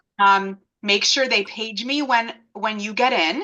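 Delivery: ordinary delivery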